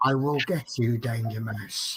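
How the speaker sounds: low, soft, sinister West Country cartoon villain voice. Showing how they are reading a message aloud, evil West Country Danger Mouse villain. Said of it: "That's how I'm reading it".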